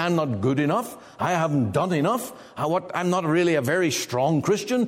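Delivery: plain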